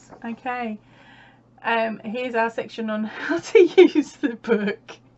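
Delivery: loud, giggly, laughing through the words. Flipping through a crochet book with puppy photos, giggling. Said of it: "I'm just giggling at the puppy photos".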